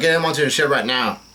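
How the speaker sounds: ordinary talk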